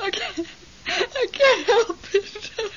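high-pitched, tearful crying. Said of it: "Don't cry".

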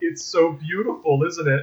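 normal talking voice

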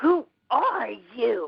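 hostile, angry male voice, swooping pitch. Retelling a man's voice heard speaking in the room: imitating an angry man's voice. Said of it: "he spoke with an angry voice".

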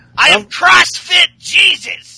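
slimy, very high, loud, slow, drawn-out voice. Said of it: "He sounds so slimy and".

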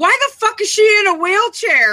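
acted out, shrill, very high, loud yell. Retelling watching a preview for the next episode, re-enacting yelling at the tv. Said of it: "And I'm yelling this at the TV".

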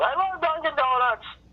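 mock very high-pitched yelling outburst. Retelling a heckler's interruption during a comedy set: imitating a heckler yelling. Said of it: "she yells".

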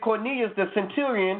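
usual speaking voice

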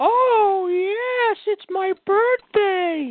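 very high, very slow drawl, every word drawn out. Answering a request for an impression on his birthday: Paul Bearer impression. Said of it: "you should do a little bit of a Paul Bearer impression".

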